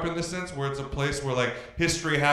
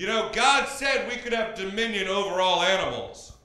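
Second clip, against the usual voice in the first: mock preachy, lecturing voice, yelling; 4 semitones higher than usual. Retelling a dad yelling from the other end of the dinner table: imitating a dad yelling. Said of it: "he yelled out".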